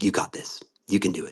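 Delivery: breathy, whispered, psyched-up self-encouragement. Playing a character looking at their reflection: pumped-up self pep talk. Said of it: "just pumping myself up".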